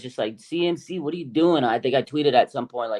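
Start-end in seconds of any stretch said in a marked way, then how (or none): 0.4-1.6 play-acted, small, mild yell of disbelief. Retelling screaming during a game: imitating own screaming. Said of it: "I was literally screaming".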